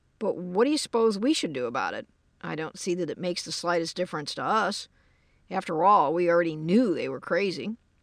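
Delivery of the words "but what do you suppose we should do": plain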